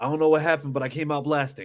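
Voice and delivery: ordinary talk, nothing marked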